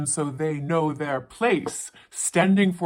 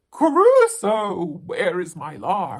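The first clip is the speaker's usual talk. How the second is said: loud cry with swooping pitch; 2 semitones higher, 5 dB louder than usual. Reading a story aloud, the narrator gives a woman's line, crying out. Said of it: "And she cries out".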